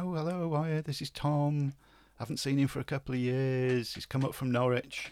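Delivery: mock, cheery voice called out from a distance. Recounting shouting an introduction to a woman fifty yards away, retelling a shout. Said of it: "I'm shouting".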